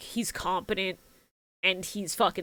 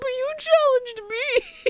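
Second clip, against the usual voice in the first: put-on, very high, blubbering crying child's voice. Retelling a subbed anime scene, quoting the kid: imitating a crying kid. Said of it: "the kid just starts crying and going".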